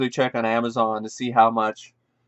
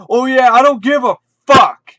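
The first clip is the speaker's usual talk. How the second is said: mock shrill, booming, very loud furious yell. Retelling a store owner getting in his face, retelling an angry in-your-face rant. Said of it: "gets right in his face".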